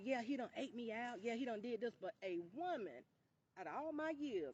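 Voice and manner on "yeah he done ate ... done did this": ordinary talk, nothing marked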